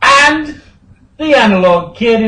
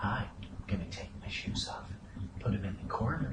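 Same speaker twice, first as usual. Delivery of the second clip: breathy, near-whispered host voice; 10 semitones lower, 26 dB quieter than usual. Showing what it would sound like: Mister Rogers voice. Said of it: "If it were Mister Rogers, it'd be".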